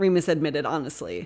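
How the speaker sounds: ordinary delivery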